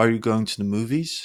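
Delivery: rising question-like pitch on "movies". Yes-or-no question example: rising pitch at the end on movies. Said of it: "Your voice raises".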